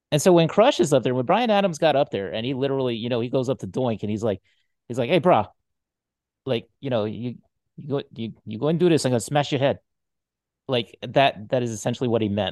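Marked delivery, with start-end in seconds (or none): 5.1-9.8 put-on Hawaiian Pidgin accent. Retelling what a wrestler said to Doink: imitating Crush speaking Hawaiian Pidgin. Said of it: "that's Pidgin for".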